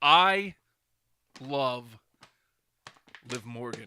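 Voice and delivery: broken up, halting, split by long pauses. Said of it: "Did I ruin that take?".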